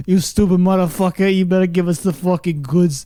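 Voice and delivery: put-on Italian mobster voice. Retelling beating a mattress with bats: imitating Italian mobster voice. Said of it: "talking like we're Italian mobsters".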